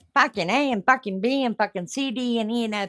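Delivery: mock rough Liverpool accent.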